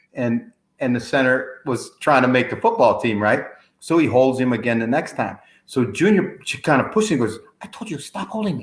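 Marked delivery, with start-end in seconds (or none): 7.7-8.7 very quiet, tiny little squeaky voice. Telling a football story, the speaker quotes Junior, imitating Junior's tiny squeaky voice. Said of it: "With that little tiny, you can hardly".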